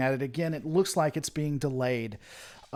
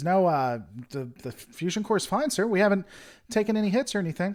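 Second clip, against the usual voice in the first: put-on, very feminine voice; 4 semitones higher than usual. Narrating a scene where Ensign Bob reports: Ensign Bob's very feminine voice. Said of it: "in a very feminine voice says".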